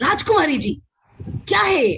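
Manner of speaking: sharp, high, angry shouting. Demonstrating tone while addressing Rajkumari ji, in angry shouting. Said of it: "you already know I'm angry or I'm shouting".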